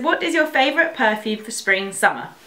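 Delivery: ordinary talk, nothing marked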